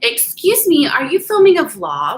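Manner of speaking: put-on sugary-sweet, sing-song, high young girl's voice. Retelling how a thirteen-year-old girl asked about filming: imitating a sweet-sounding girl. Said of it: "so sweet".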